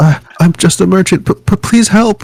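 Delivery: put-on very high, frightened, scared girlish shriek. Voicing a small cloaked merchant fleeing a monster: screaming in a young girl's voice. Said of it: "She screams".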